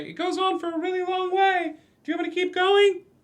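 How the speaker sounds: very high, tiny, little piping voice. Game master voicing a small voice from inside the room, small voice. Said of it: "you hear a small voice from inside the room say".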